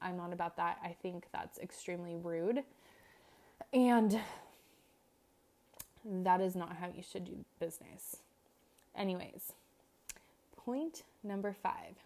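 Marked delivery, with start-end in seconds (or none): 0.0-8.2 irritation plain in the voice, annoyed delivery. Explaining a late-fee policy for clients who ghost: audibly annoyed. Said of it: "You can probably hear it in my voice".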